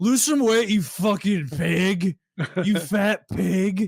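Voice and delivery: slow, high, drawn-out put-on drunken jeer. Retelling a protest clip, imitating a drunk frat guy. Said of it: "nine Coors Bankies deep".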